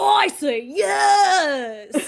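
high, laid-back surfer drawl, stretched-out "yes". Describing a cartoon scene, the speaker quotes Goofy in a surfer dude voice. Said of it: "he totally sounded like a surfer dude".

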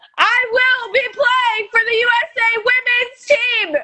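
very high, loud, all-out yell. Repeating a pledge after being told to say it louder: loud shouting.

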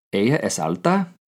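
rising tune lifting on alta. Giving the second Spanish example sentence, this time as a question, with question intonation. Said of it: "The second sentence will be a question".

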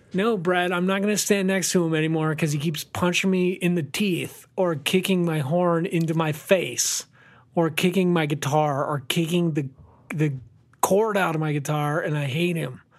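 ordinary talk

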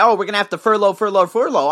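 normal talking voice

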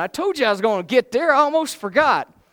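high, loud, wound-up, words tumbling out fast. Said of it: "I get wound up".

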